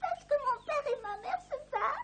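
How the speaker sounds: put-on crying child voice. A child, asked why she is crying, answers: crying child. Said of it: "Pourquoi tu pleures".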